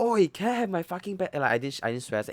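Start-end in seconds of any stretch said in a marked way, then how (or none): 0.0-1.3 acted, furious shout, pitched very high. Recounting standing up to a bully at school, the speaker retells an angry shout. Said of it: "then I shout".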